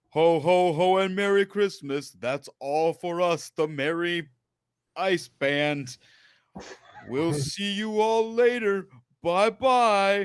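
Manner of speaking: high robotic bear voice, long drawn-out "bye". Retelling looking up at people by the elevator, robotic bear voice. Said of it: "in my most robotic bear voice".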